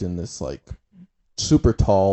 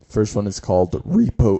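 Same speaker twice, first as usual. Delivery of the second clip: voice cracking. Introducing the first game show to another speaker, voice cracking. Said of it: "my voice cracked like crazy".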